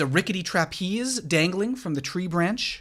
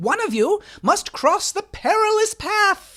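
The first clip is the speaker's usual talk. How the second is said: very high, loud ringmaster bellow, as through a cone; 6 dB louder than usual. Narrator voicing her as she points the queens to the first obstacle, bellowing into a paper cone. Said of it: "bellowing into a paper cone".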